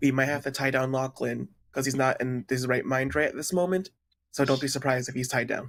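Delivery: very quiet, hushed voice. Warning the others so a nearby companion won't overhear: speaking very quietly. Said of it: "very quietly so that Lachlan isn't over here".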